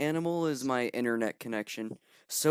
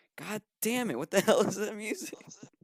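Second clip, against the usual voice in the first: mock, pitched-up yell hollered from another room; 7 semitones higher than usual. Retelling the sister yelling from the other room: imitating the sister yelling. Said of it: "your sister yelling out".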